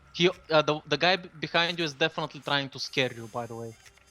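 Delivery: ordinary delivery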